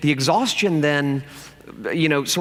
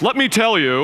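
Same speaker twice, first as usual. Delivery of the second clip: preachy, self-righteous, holier-than-thou put-on voice; 6 semitones higher, 5 dB louder than usual. Mocking people who speak as if above everyone: self-righteous Pharisee voice. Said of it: "you like that voice?".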